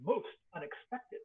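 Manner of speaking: voice heard in the mind. Voicing a chained creature speaking into a player's head. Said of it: "you hear this voice in your head".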